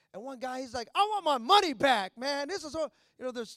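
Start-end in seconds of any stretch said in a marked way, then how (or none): 0.9-2.7 booming, very loud yell, shouted out. Retelling a moviegoer's complaint while walking out: imitating someone yelling. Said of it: "he's yelling".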